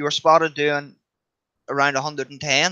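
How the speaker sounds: ordinary talk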